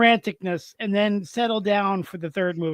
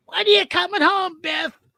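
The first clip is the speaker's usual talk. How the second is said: put-on elderly granny voice, pitched way up, very high; 10 semitones higher than usual. Recalling a favorite movie bit and quoting the grandmother's line: Biff's grandmother voice. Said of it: "You even sound a little bit like her".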